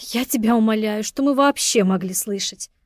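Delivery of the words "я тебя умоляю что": plain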